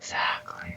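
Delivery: creepy whisper. Agreeing with the other speaker's warning: creepy whisper. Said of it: "You're creepy again".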